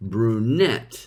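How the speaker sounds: brunette with stress on second syllable -nette. Modeling pronunciation for learners to repeat: brunette stressed on second syllable. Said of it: "Please repeat stressing the second syllable".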